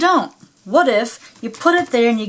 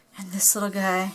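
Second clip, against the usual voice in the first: quiet whisper, quieter; 3 semitones lower, 10 dB quieter than usual. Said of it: "I'm whispering again for some reason".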